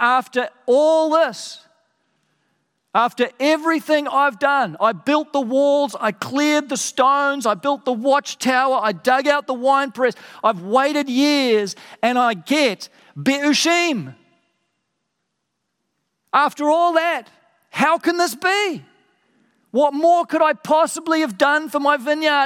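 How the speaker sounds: fed-up, exasperated complaining tone. Speaker voices God's words about his vineyard, acting out exasperation. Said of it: "you can just hear the exasperation in God's voice".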